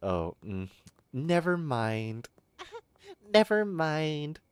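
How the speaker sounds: put-on high, drawn-out e-girl voice. Mocking e-girls after they see the guy in person: imitating e-girls online. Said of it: "they see the guy I R L and they're like".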